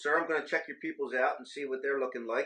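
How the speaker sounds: plain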